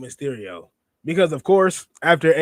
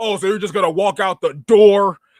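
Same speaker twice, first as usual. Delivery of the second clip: angry, loud, raised, pitched-up voice; 5 semitones higher, 7 dB louder than usual. Quoting a wrestling moment in someone's words: angry Jesse Ventura voice. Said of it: "in an angry style".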